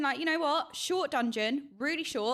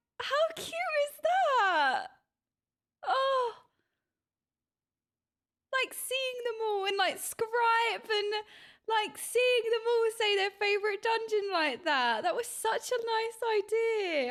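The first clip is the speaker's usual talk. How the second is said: getting emotional, choked; 8 semitones higher than usual. Speaker reacting to everyone naming their favourite dungeon, choked up. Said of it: "I just got all choked".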